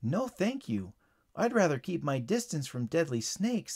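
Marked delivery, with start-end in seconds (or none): none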